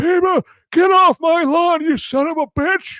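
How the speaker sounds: put-on very high, shrill, loud, cranky old-man holler. Joking about pointing at viewers like an old man: old man yelling get off my lawn. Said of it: "like I'm some old man saying".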